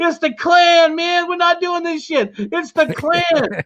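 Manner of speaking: put-on yelling. Retelling a story of a man with a shotgun yelling to his roommate, retelling a yell. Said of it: "he's yelling".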